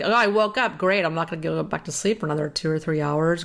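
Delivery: ordinary talk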